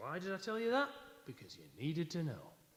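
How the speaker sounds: chatty, lilting, high sing-song voice. Quoting a radio host's mum, doing an impression of his mum. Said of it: "That's an impression of his mum".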